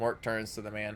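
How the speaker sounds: plain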